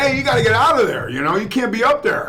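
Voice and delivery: loud yell. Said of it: "So I yell up there".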